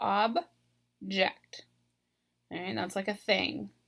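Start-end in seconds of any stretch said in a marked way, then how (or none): 0.0-1.6 object with first syllable OB stressed, noun form. Speaker explaining word stress says the noun form, stressing the first syllable of 'object'. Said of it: "I'm stressing this first syllable".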